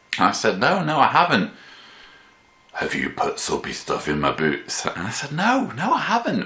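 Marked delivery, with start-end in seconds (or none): 2.7-4.8 put-on Scottish accent, spoken more quietly. Retelling what a man kept asking them, in a scottish accent. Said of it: "So here's my Scottish accent".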